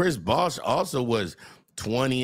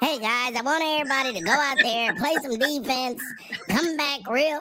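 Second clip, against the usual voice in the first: very high, squeaky put-on duck voice; 13 semitones higher than usual. Imitating the head coach talking to players: Avery Johnson impression. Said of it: "how Avery Johnson talk".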